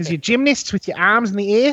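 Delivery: put-on high-pitched New Zealand accent. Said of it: "we all started running around talking like this".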